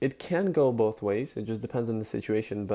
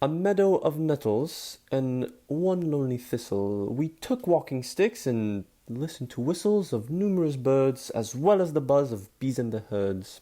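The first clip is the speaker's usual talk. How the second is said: bad, mixed-up British accent; 3 semitones higher than usual. Reading a poem aloud in a terrible British-Scottish-Irish accent. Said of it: "read it in my British slash Scottish slash Irish, whatever other accent".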